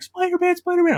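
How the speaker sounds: very high, loud, thrilled, excited shrieking scream. Retelling seeing a Spider-Man trailer as a kid: imitating own childhood screaming.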